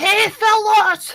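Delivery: very high pitched yelled voice. Yelling down at people below from an arrow slit: in-character yell. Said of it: "I'm gonna yell down at them".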